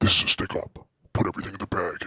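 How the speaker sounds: extremely deep, bottomed-out voice, as low as it goes. Speaker shows how much lower their voice can go, in an extremely deep voice. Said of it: "if I really wanted it to go even lower".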